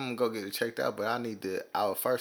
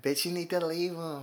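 high, fake feminine put-on girl voice; 8 semitones higher than usual. Acting out what he'd tell a female friend, in a put-on girl voice. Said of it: "I hate your girl voice".

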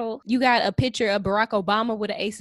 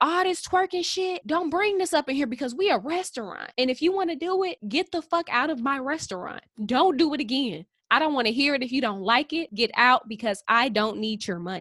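put-on, scolding yelling; 3 semitones higher than usual. Retelling a restaurant owner yelling at his customers: imitating someone yelling. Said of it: "he's yelling at all these people like".

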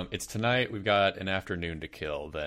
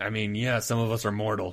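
gravelly put-on character voice; 3 semitones higher than usual. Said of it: "doing a gravelly voice".

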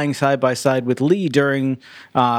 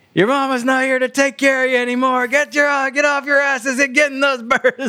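put-on yelling, much higher pitch; 12 semitones higher than usual. Quoting an actor's ad-libbed lines from an episode: imitating Aaron Douglas yelling.

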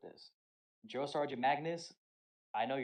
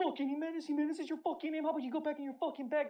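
very high, shrill drill-sergeant bawling; 14 semitones higher than usual. Retelling a woman yelling at him, a private, retelling her shouting. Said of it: "She's shouting".

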